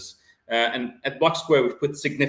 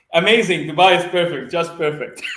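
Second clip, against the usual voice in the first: bright, loud speech bubbling through laughter; 6 semitones higher, 7 dB louder than usual. Guest asked how things are going in dubai, laughing while talking. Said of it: "I can't stop laughing".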